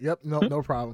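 normal talking voice

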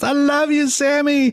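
put-on very high, girlish, youthful shriek. Retelling what a kid called out from the crowd, imitating a girl screaming. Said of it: "But but she's just screams".

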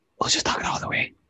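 soft whispered voice.

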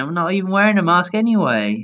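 frenzied, unhinged shouting. Retelling a confrontation about masks, quoting a woman, retelling a woman's shout. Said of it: "She's shouting".

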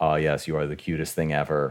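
put-on flat deadpan. Retelling a character's reaction to Kiki, mock deadpan reaction. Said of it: "his fucking deadpan reaction of being like".

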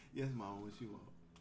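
mock very low, soft, cool, calm delivery. Retelling answering his mama's call from upstairs, in a put-on nice calm voice. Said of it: "Nice, cool, calm voice".

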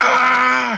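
high-pitched screaming. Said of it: "almost screaming like".

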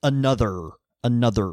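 rhotic r in "another". Showing how a rhotic accent says the word: hard r in another. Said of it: "you're using that R like a".

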